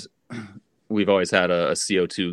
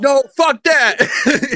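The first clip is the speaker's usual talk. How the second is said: put-on angry voice, higher and louder; 10 dB louder than usual. Retelling how a friend reacted when someone suggested scissors: imitating a furious friend. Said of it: "He's, like, so mad".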